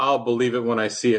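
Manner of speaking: ordinary talk, nothing marked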